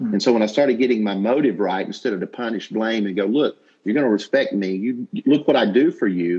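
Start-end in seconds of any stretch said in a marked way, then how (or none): 3.2-6.4 mock amped-up, agitated, heated and forceful angry delivery. Recalling punishing and blaming someone, reenacting own angry tone. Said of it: "Now you can see my tone and I'm getting amped up right now just saying it".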